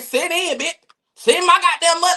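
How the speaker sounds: put-on nasty bossy attitude. Retelling a woman's rude demand for money: imitating a nasty, evil attitude. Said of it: "that was a nasty little, evil little attitude".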